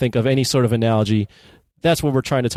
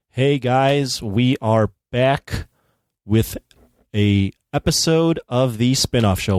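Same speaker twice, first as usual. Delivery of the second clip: very slow, unhurried, drawn-out delivery. Host opening a new episode of the Spinoff Show, talking slowly. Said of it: "Why am I talking so slow?".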